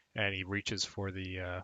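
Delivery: plain reading voice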